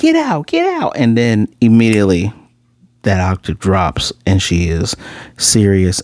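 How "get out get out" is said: very high, sweetened-up, put-on nurse voice. Retelling a scene where a character pretends to be a nurse: imitating a high-pitched voice. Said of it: "So it's up here".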